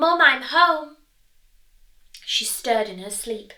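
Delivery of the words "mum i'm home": very loud, high calling-out. Coming home from school, calling to Mum in her bedroom in a loud voice. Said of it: "said in a loud voice".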